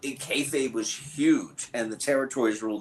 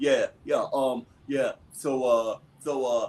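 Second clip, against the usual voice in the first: mock punch-drunk boxer voice. Imitating how boxers talk after being punched in the mouth often. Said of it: "Most boxers kinda talk like that because they've been punched in the mouth".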